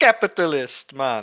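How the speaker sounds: put-on Jamaican-flavoured accent. Trying to say a word in a Russian accent, it comes out Jamaican-sounding. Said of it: "that's Jamaican".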